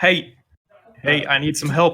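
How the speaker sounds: loud shout from a distance. Narrating to the players, a familiar voice shouts to them from down the street. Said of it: "a somewhat familiar voice like shouting your name".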